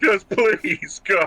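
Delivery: high, tearful, sobbing crying voice. Voicing a voice heard inside the heads: sobbing voice. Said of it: "we hear a sobbing voice in our head".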